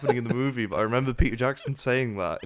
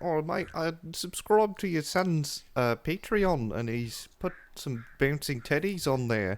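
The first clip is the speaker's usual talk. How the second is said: put-on slow, chatty New Zealand accent; 4 semitones higher, 4 dB quieter than usual. Speaker quotes a little new zealand fellow, new zealand accent. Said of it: "little New Zealand fellows went".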